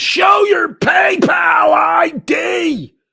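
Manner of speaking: very high, very loud, very slow, shrill drawn-out scream. Reading a viewer's chat message aloud, imitating a scream. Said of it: "Miss Mandy screams".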